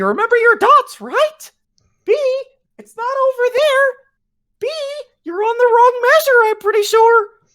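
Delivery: squeaked out high and loud. Retelling someone correcting a tuba player's mistakes: Mickey Mouse impression. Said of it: "you could hear him doing Mickey Mouse".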